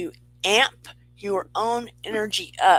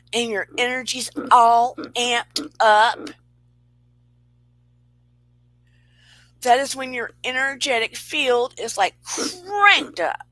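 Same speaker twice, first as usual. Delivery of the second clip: voice swelling up to loud, raised voice; 4 semitones higher, 3 dB louder than usual. Describing how energy feels with a new crush, getting loud. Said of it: "Sorry for getting so loud".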